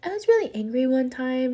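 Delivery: put-on pure, sweet little-girl voice. Retelling what a little girl told a woman at a therapy center, purest little voice. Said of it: "purest little voice".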